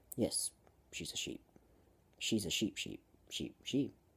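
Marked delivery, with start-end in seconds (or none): none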